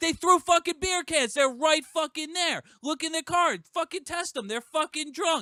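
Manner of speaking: shrill, high, frantic, flipped-out raging yell. Recounting yelling at a cop about drunk people who threw beer cans; retelling a yell. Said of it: "I'm yelling at the fucking cop".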